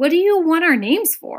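worried, nervous. In a hurry, a traveler questions the census taker, anxious. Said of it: "looking anxiously over his shoulder".

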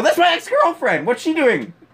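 high, loud, mock furious yell.

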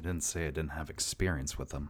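low, muttered under the breath. The narrator gives Tenna's reply about experience with children: muttered under her breath. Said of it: "Tenna says under her breath".

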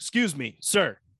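put-on acted big boy tone, polite. Retelling addressing a man, in a put-on big boy voice. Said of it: "big boy voice".

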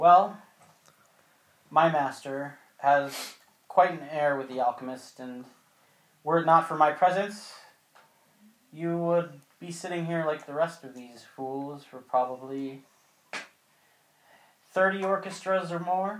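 weary, drawn-out drawl. Speaker voices a vain woman replying to flattery, in a tired drawl. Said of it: "she says in her tired sort of drawl".

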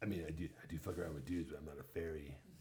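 deep monster voice. Repeating the line as the Hormone Monster: Hormone Monster voice. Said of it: "doing these voices".

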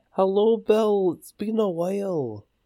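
very high, very slow, drawn-out stretched voice. Greeting a friend after a long while: Billy Connolly voice. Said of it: "I went Billy Connolly there".

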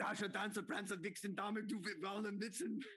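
put-on Austrian accent. Recalling a movie scene in conversation, doing an Arnold impression in a thick Austrian accent. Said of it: "In that thick Austrian accent".

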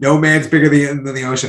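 ordinary talk, nothing marked

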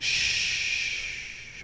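hushed whisper. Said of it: "I just whisper to 'em".

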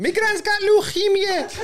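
mock Scouse accent, very high and slow, squeaky.

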